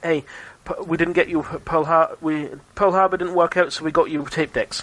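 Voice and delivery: ordinary delivery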